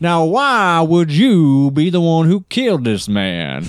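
very high, swooping, sing-song Southern drawl. Describing Daniel Craig's detective character to friends, doing a Daniel Craig impression. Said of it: "He's like".

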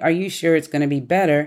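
ordinary talk

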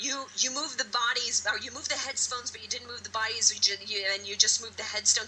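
normal talking voice

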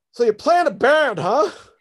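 loud, high-pitched rural hillbilly drawl. Recalling a man looking over his resume, in a redneck hillbilly voice. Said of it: "like redneck kind of voice".

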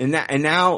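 ordinary talk, nothing marked

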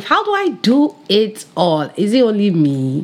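put-on Nigerian accent with swooping pitch. Speaker posing a question to her audience, in a Nigerian accent. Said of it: "I had to put my Nigerian accent there".

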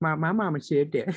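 put-on high-pitched Southern Louisiana accent. Imitating Bobby Boucher after thinking of him: Bobby Boucher voice. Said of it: "Bobby Boucher for a second".

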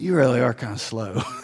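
put-on quiet low chuckle. Retelling Peter asking to be washed, imitating Jesus chuckling under his breath. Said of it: "Jesus kind of chuckles under his breath".

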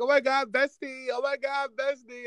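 mock bestie voice, high, gushing and fake-sweet.

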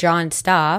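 ordinary talk

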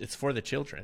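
heavy, dripping sarcasm, plainly not meant. Answering a complaint about teacher pay: very sarcastic. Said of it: "I say that very sarcastically".

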